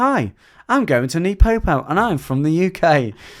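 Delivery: put-on loud southern English accent. Acting out a trainer's phone call to you, imitating Ryan Spinks's southern UK accent. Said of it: "He's from like down south".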